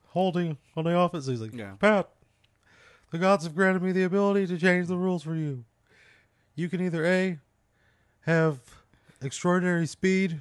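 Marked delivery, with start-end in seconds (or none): 1.8-10.4 announced like a referee's call. Retelling what a man said to pat, like a referee calling a penalty. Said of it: "he's saying it like he's calling a penalty".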